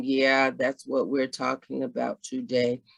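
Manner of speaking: dull, very low, flat droning monotone. Speaker demonstrating a boring way of talking, in a monotone voice. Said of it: "in a monotone voice".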